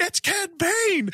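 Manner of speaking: mock, very high, thrilled, excited scream. Retelling jumping up at a show reveal: retelling screaming at the TV. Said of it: "jumped out of my seat and screamed at the T V".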